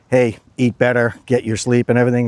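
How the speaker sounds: normal talking voice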